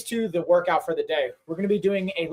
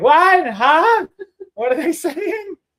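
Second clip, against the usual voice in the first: very high, slow, drawn-out raised voice; 10 semitones higher, 7 dB louder than usual. Teasing a co-host about TikTok comments: imitating Carrie. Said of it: "It was like".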